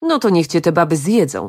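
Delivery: ordinary delivery, nothing marked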